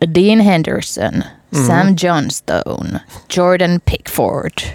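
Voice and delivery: words read in a put-on American Yankee accent. Listing England's players, the speaker reads the names; put-on American accent. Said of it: "Mä puhun tällaisella jenkkiaksentilla".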